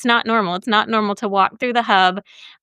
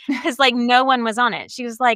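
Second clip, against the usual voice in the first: ordinary talk, nothing marked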